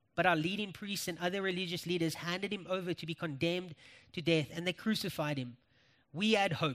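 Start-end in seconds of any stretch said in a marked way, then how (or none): none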